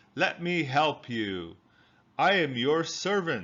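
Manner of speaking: hoarse, croaking frog voice. Narrator reading a fairy tale, the frog offering help to the princess, in a croaky frog voice. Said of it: "he croaked".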